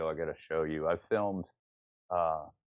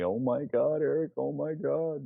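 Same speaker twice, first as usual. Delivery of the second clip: put-on very slow, high, scared-stiff pleading voice; 9 semitones higher, 3 dB louder than usual. Retelling what a friend crouched behind him said, imitating his scared, high-pitched voice. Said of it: "he's got this high-pitched voice saying to me".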